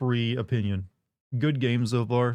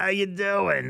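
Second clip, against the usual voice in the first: rough, strained, high-pitched longtime-smoker voice; 7 semitones higher than usual. Demonstrating the voice of a longtime-smoker aunt: rough smoker-aunt voice. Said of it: "the really rough voice".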